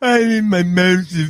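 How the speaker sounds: put-on droopy cartoon voice. Imitating the movie character at the pharmacy: Droopy Dog voice. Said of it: "it's like fucking Droopy Dog".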